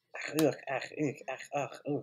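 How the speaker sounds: nonsense German with "ach" and "ugh" grunts. Retelling a scene from a show with a German maid: imitating a maid speaking German. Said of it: "she speaks only German".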